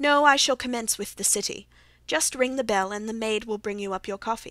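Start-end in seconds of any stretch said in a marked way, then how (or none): none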